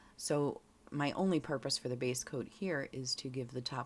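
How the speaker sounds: ordinary talk, nothing marked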